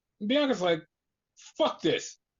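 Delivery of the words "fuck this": put-on angry, pissed-off, fed-up, done-with-it tone. Retelling a wrestler's reaction after getting hit: imitating someone pissed off. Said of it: "Bianca's just pissed off now".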